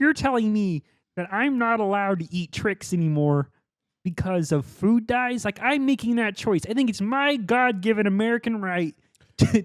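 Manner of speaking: high, loud cartoon frog character voice. The speaker rants in character, later called Mister Kermit: Kermit the Frog voice. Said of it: "Mister Kermit".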